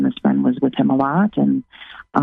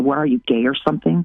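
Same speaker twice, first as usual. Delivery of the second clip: mock biting, really snarky sarcastic jab. Retelling a retort to a spouse: imitating a snarky retort. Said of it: "really snarky".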